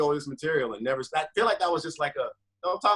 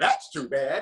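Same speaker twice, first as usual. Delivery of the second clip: electronic robotic machine voice through a phone speaker. Repeating what a phone said back after a breakup remark, in an electronic robotic phone voice. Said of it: "It was a fucking phone voice".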